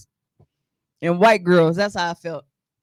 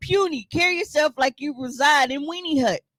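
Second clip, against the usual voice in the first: normal talking voice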